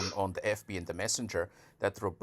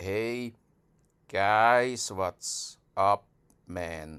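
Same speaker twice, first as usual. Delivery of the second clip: very slow, loud drawl, drawn-out "guys"; 5 dB louder than usual. Describing how a man talked, imitating his very slow speech. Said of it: "speaks very slow".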